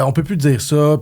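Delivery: ordinary delivery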